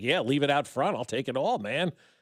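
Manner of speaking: ordinary talk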